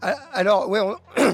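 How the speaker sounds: slow voice cracking and breaking mid-word. Starting to answer a question in an interview, voice cracking. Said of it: "j'ai j'ai la voix qui déraille".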